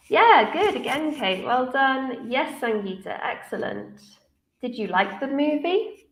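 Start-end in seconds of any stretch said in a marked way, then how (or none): 4.6-5.9 rising tone at the end on movie. Teaching yes/no questions, saying the question with rising intonation at the end on movie. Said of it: "for yes, no questions, we use a rising intonation".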